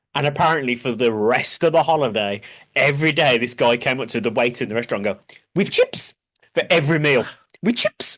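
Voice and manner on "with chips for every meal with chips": put-on Turkish accent, broken English. Retelling a holiday story the speaker's dad told, put-on Turkish accent. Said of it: "that was the voice my dad did".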